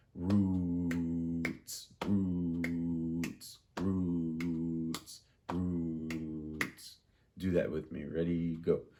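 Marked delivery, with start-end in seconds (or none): 0.2-7.0 very slow, each word drawn out over three beats. Showing a class how a three-beat note sounds: drawn-out word over three beats. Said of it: "So like this".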